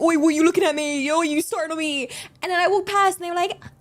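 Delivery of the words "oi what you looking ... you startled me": mock yelling like a scary street gang. Retelling how a scary group shouted at a random stranger: imitating someone shouting. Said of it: "shouting at some random stranger".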